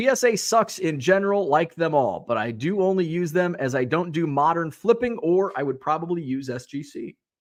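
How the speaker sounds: ordinary delivery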